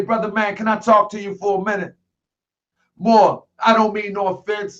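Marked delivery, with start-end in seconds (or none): none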